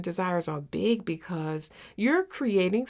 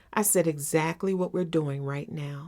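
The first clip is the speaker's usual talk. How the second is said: plain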